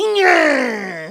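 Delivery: put-on loud, high, heavy Brooklyn accent. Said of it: "let me do it in my Brooklyn accent".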